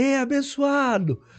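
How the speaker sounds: mock shouting. Retelling how inmates called out to him: imitating someone shouting. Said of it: "daqui a pouco gritaram".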